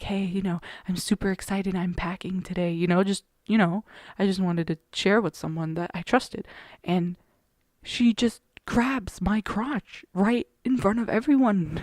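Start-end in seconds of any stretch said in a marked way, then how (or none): 0.0-2.7 mock hushed whisper. Retelling whispering to a classmate in the morning before class: retelling a whisper. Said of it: "I whispered to her in the morning".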